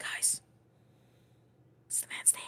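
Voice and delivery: urgent, hushed, breathy whisper. As a player character in a role-play game, speaking to the party: whispering. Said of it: "I'm whispering to the party".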